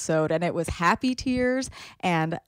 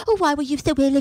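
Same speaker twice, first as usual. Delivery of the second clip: high, teasing, put-on British accent; 6 semitones higher, 4 dB louder than usual. Mimicking a british man whenever he spoke, in a mocking british accent. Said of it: "but also so British".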